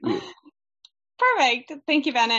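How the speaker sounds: talking through laughter. Thanking bennett after missing his last words, laughing while talking. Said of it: "I'm sorry that I'm laughing at it".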